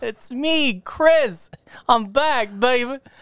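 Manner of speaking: silly, goofy, high, hammed-up cartoonish character voice. Speaker announcing his return during a bit, sounding like Brack. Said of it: "why do you sound like Brack?".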